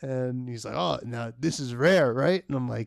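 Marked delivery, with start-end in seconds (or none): 0.8-2.4 put-on thickly accented, really excited, over-the-top gush. Retelling what the boss said on camera: imitating boss's over-the-top excited accent. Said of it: "he's got this really thick accent".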